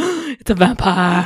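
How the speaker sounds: acted, breathless, dramatic horror-movie gasping exclamation. Retelling the police finding the stake: dramatic gasping exclamation. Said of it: "calls for a dramatic effect".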